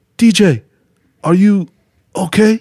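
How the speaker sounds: high, halting broken English. Retelling how grandpa woke to find the speaker sobbing: imitating grandpa's limited English. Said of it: "in his limited English".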